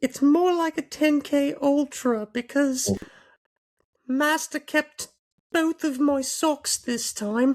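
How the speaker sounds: put-on very high, piping old-man voice. [name] answers a co-host's question about the 10K, doing a Dobby voice like Family Guy's old man. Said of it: "you really sound like the old man".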